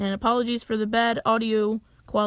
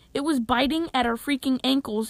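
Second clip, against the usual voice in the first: usual speaking voice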